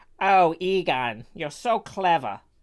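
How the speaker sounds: New York cab driver style voice and accent. Trying to do Janine from Ghostbusters for the other speaker, Janine voice in New York accent. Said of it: "you do have like New York Taxi Driver down".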